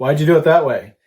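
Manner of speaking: snide, smart-alecky, acted-out tone. Retelling what an inspector asked: imitating a smart-ass tone. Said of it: "Kind of like in a smart ass tone".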